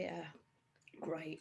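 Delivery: very soft, low, flat, unenthusiastic, unhappy mumble. Answering someone's plan to go back to Earth; not sounding happy. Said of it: "You don't sound happy".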